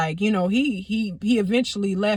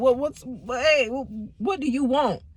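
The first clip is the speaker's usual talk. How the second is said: acted-out stuttering, higher pitch; 4 semitones higher than usual. Retelling a phone call from him, acting out own stuttering. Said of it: "I just was stuttering".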